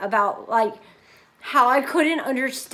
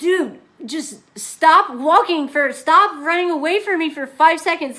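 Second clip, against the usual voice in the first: raised, pitched-up yell; 5 semitones higher, 6 dB louder than usual. Retelling following a guy across a busy street, retelling a yell. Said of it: "I'm like yelling back at him".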